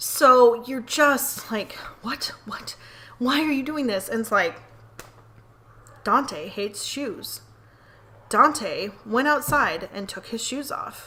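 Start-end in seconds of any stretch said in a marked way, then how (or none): 6.0-11.1 storybook narrator voice, long pauses after sentences. Imitating a narrator who pauses after every sentence, long pause after each sentence. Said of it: "the narrator like leaves a pause at the end of every sentence".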